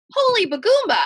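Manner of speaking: very high, shrill, loud little-bird parakeet shout. Narrator reads him shouting once between laughs, Dolores the parakeet voice. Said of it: "in the voice of Dolores the parakeet".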